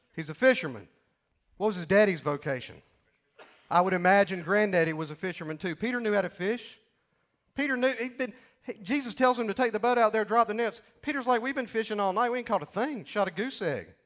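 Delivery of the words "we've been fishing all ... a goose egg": full-on, total sarcastic tone. Retelling Peter's reply to Jesus about the nets: put-on sarcasm as Peter. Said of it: "with total sarcasm".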